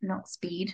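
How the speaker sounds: soft, unvoiced whisper.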